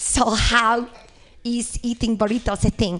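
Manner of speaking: put-on bad Icelandic accent. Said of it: "my Icelandic [name] accent".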